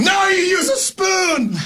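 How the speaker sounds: shouting voice. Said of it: "I said".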